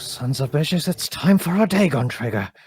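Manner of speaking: whispered voice. Voicing a character who sneaks up in the shadows: whispered voice. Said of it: "a whispered, like, voice just go".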